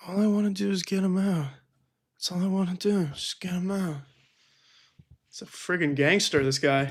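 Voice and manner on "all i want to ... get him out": put-on low-energy whisper. Mimicking a whispering speaker who wants a man out: imitating Trump whispering. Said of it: "He's, like, whispering".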